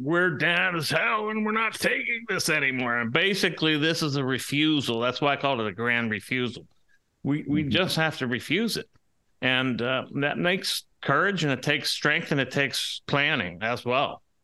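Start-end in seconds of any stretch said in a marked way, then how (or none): 0.0-3.0 play-acted, defiant cry, pitched high. Speaker quotes Howard Beale from the movie Network, retelling Howard Beale screaming. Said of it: "he starts screaming".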